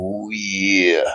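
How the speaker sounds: dropped way down, dragged out. Retelling what gets said when sending someone a clip: Macho Man Randy Savage voice. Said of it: "I can't do it that great".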